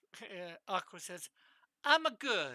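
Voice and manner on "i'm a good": very loud fake Italian accent. Voicing another person's line in a put-on Italian accent. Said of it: "I don't know why I'm giving him an Italian accent".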